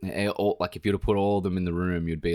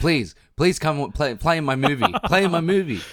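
put-on pleading voice, higher and louder; 10 semitones higher, 7 dB louder than usual. Imagining how Scorsese would beg an actor to join: imitating Scorsese begging. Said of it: "Scorsese just is fine to be squabbling".

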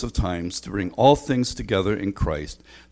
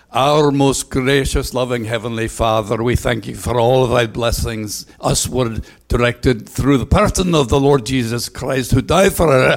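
very bad Scottish accent, loud, in one unbroken stream; 4 semitones higher, 7 dB louder than usual. Showing how Murdo prayed in church, bad Scottish accent as Murdo. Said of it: "I have the worst Scottish accent".

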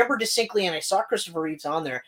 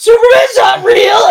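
mock sobbing outburst, higher and louder; 14 semitones higher, 15 dB louder than usual. Retelling learning the truth as a child: imitating own crying. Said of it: "And I just start fucking crying".

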